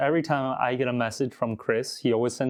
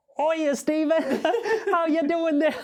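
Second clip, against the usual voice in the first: put-on British accent, pitched very high. Describing how the listener greets him, the speaker does a mock british accent. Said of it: "I prefer your impression of my impression".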